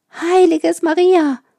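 high, loud, shrieking scream of alarm. After he hides in a bush, someone is heard: screaming. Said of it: "ein Schreien".

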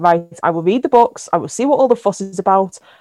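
ordinary talk

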